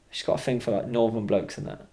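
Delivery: ordinary talk, nothing marked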